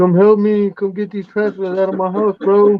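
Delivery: scared, high, panicked pleading tone.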